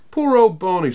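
said with a laugh. Lou responds to Barney bumping his head, laughing. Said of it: "said Lou and laughed".

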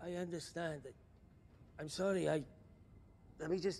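scared, panicked, fearful, stumbling voice. Answering a caller on the phone: panic and fear in voice. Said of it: "the fucking panic and fear in his voice".

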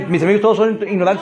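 ordinary talk, nothing marked

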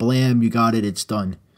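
ordinary delivery

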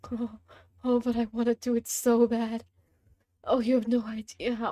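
words half moaned, slow and drawn out. Saying how badly one wants to jump, sounding like moaning. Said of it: "why do I sound like I'm trying to moan?".

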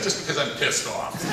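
ordinary delivery

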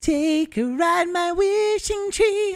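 very high, enchanted, magical voice. Asked by a listener to do the voice, the speaker uses a magical voice. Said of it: "the magical voice".

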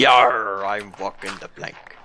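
put-on pirate voice. Talking like a pirate while walking the plank: pirate talk. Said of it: "this is how we consider pirates to talk".

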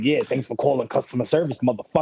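put-on aggressive phone voice. Retelling answering customer service calls at work: imitating answering calls aggressively. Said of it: "Answering calls all, all aggressive".

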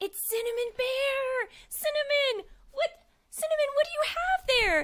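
high, excited and thrilled.

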